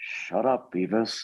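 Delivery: cartoon-character voice sounding as dumb as possible. Doing the requested impression, telling Beavis to shut up: Butthead impression. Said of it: "one of them just like".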